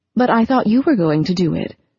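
ordinary delivery

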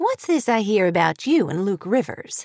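plain

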